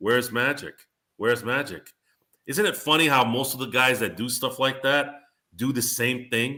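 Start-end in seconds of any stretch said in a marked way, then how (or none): 0.0-1.9 put-on patronizing, superior, condescending, mocking tone. Telling Sean about how Rob would come in, mocking Rob's condescending tone. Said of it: "condescending tone of".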